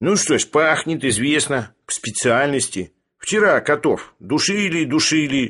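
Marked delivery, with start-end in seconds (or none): none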